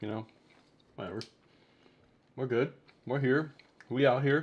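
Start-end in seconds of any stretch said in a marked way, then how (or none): 2.4-4.4 words mushed, talking while chewing, mouth full. Streamer greeting chat at the start of the stream, talking while chewing. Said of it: "As I'm chewing".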